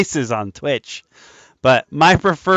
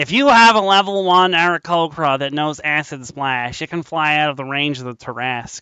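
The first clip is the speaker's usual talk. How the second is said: nerdy, geeky put-on voice; 2 semitones higher than usual. Retelling a joke about a game rule, using a nerd voice. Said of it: "I'm using my nerd voice for this".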